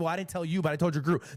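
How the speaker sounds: put-on tough tone. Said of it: "the guy started real tough".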